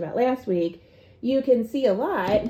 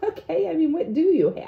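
mock condescending, pitched-up talking down; 7 semitones higher than usual. Recalling getting irritated and acting out what they said back then, mock-condescending. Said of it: "like really condescending".

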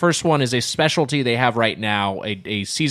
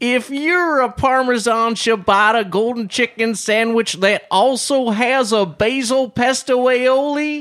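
put-on, very slow, high Southern drawl; 11 semitones higher, 3 dB louder than usual. Doing a "you might be a redneck" joke about a sandwich: Southern accent. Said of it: "to hear that word in a Southern accent".

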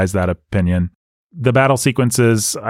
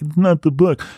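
sniffy, snobby, know-it-all, pitched-up, dismissive tone; 8 semitones higher than usual. Retelling a past reaction to the first film: imitating own snobby past self. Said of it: "I think I was a little snobby".

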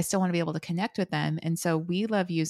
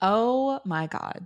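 fed-up, high, exasperated exclamation; 5 semitones higher than usual. Reacting to vacation being named as a common reason: exasperated eye-roll tone. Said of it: "in case you couldn't hear it in my voice".

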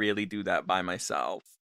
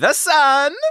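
shrill, booming, very high, very loud put-on foreign voice; 13 dB louder than usual. Impression of how a character might sound in space: Borat voice. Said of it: "this is my impression of what Borat might sound like if he was in space".

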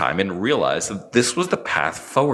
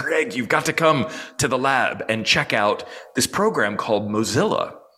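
clumsy, put-on, really poor Salvadoran Spanish accent; 4 semitones higher than usual. Speaker recalls a college roommate back from class; poor imitation of Rick's accent. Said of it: "I'll try to do a really poor accent".

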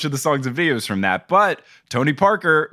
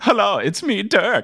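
put-on high, laid-back, chill male German accent; 5 semitones higher than usual. After saying they couldn't manage it, the speaker attempts a Dirk impression. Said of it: "I couldn't do chill German guy".

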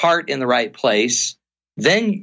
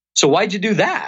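rising tune on "do that", rise on "that"; 5 semitones higher than usual. Explaining how a question sounds, questioning inflection on why'd you do that. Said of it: "the minute you inflect like that".

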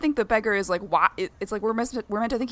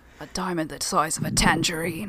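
bad put-on older English accent, pitched lower; 4 semitones lower than usual. Quoting a line from Dark Knight: terrible Michael Caine impression. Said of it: "That's my terrible Michael Caine impression".

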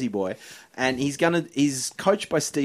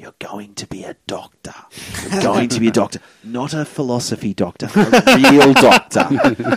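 loud, full stage half-whisper; 9 dB louder than usual. Retelling half-whispering into the sleeping nephew's ear: retelling a half-whisper. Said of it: "I just whispered in his ear".

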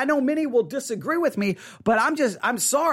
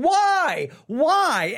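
mock screaming, pitched much higher; 5 semitones higher than usual. Retelling reading an email this morning, imitating own screaming. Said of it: "I just start screaming".

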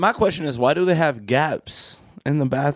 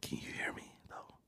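hushed, very quiet, barely-there whisper. Checking whether the other person can hear, as a prank, whispering. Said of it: "Why are you whispering?".

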